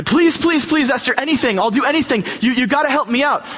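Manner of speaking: frantic, groveling, high, desperate voice. Retelling the Esther story, acting out Haman pleading with Esther, put-on begging. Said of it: "he's begging".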